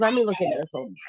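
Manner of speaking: normal talking voice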